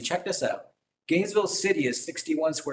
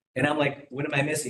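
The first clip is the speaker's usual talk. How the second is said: ordinary delivery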